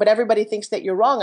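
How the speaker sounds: usual speaking voice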